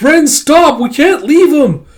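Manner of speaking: shrill, very high, drawn-out loud shout. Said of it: "my throat's getting dry from all the shouting".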